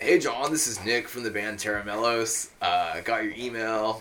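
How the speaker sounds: bad, botched put-on Northern California accent. Retelling a voicemail from a band member: bad impression of Nick. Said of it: "That's a bad impression of him".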